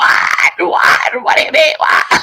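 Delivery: play-acted loud screaming. Retelling how his mother screamed on the phone: imitating mother screaming on phone. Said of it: "And she's screaming, just screaming on the phone".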